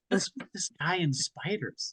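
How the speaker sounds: mumbled under breath. Speaker retelling a turn-based game with a confusing guy, mumbling under breath. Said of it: "in a voice that's mumbled to myself".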